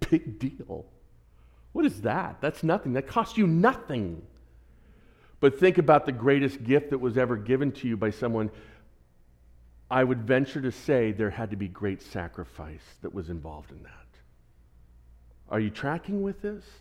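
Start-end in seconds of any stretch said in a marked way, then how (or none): 0.1-4.2 dripping, mocking sarcasm, swooping and dismissive. Retelling what Peter says about obedience: imitating Peter's sarcastic tone. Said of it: "He actually has a tone of sarcasm".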